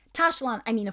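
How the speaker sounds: plain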